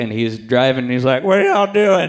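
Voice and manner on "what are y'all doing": put-on drunk small-town man voice, pitched high. Retelling what a drunk driver said on a film shoot: imitating a drunk man. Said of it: "he is drunk as a skunk".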